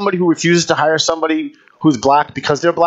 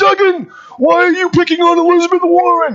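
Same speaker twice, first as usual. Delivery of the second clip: imitated yelling voice, higher pitched; 13 semitones higher, 4 dB louder than usual. Retelling the company owner's complaint on the radio: imitating Sam Polton yelling. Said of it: "He used to have a voice and talk like this".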